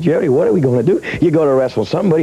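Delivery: plain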